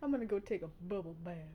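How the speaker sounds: put-on cartoon monster voice. Speaker repeats a line the speaker's boyfriend always asks for; Big Mouth hormone monster voice. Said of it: "when she says".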